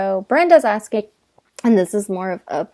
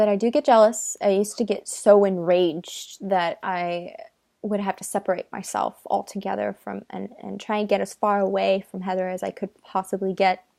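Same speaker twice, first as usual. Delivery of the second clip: ordinary talk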